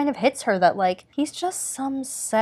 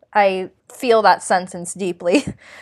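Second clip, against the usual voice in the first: ordinary talk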